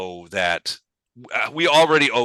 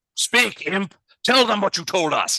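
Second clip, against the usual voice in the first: very high-pitched fantasy dwarf character voice; 11 semitones higher than usual. Voicing a dwarf who orders the imp to speak: voicing a dwarf. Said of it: "the dwarf is like".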